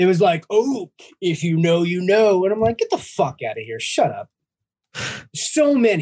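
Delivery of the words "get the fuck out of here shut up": fed-up, exasperated, fast, swinging angry outburst. Ranting to others about annoying posts, re-enacting a reaction: retelling an angry outburst. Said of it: "You seem angry".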